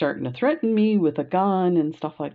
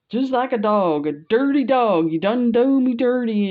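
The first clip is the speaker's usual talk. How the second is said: raised, high-pitched, aggrieved complaining tone; 8 semitones higher, 5 dB louder than usual. Retelling what a patient at the window said: imitating a patient's complaint. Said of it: "and she's going on".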